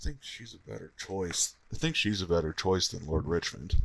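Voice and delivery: quiet, secretive half-whisper, confiding tone. Voicing a character who half-whispers to a player about a choice: half-whispering. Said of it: "he's gonna, like, whisper to you".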